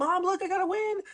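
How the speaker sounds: very high, thrilled, excited squealing scream. Retelling screaming to mom after winning a game, retelling an excited scream. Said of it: "I screamed at my mom".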